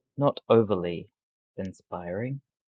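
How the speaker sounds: muttering somewhat under the breath. Speaking within earshot of her, somewhat under the breath. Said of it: "I will say somewhat under my breath".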